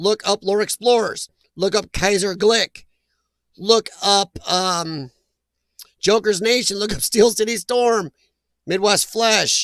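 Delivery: slowed, careful delivery.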